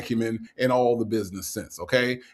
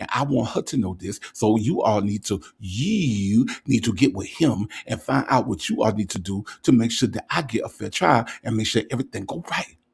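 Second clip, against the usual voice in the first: put-on whisper in a man's voice. Imitating how a caller whispers when he gets serious: imitating Nesto whispering. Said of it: "When Nesto gets serious and start whispering".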